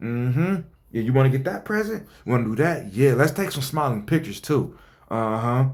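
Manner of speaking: smug, self-satisfied, egging-on voice. Reading a post aloud and imitating how this lady sounds to the reader: imitating the mother, smug tone. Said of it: "maybe it's the tone I'm reading it in, but it definitely sounds like this lady is going".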